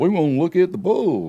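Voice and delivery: Texan character accent. Showing a character voice from his audiobook: Texan accent. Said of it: "Some of 'em are Texans".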